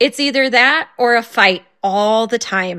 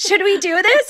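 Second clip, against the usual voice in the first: put-on eager, excited, high-pitched little child voice; 10 semitones higher than usual. Retelling a son's question about cleaning up: imitating an excited child. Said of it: "he said it like he was excited".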